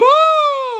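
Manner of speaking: very high, stretched-out screech. Imitating another speaker calling out a name: imitating a screaming high voice. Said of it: "Your screaming high voice?".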